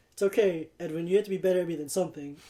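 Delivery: put-on condescending, patronizing, talking down tone. Retelling a remark made during a basketball game, imitating Matt's condescending tone. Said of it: "such a condescending tone".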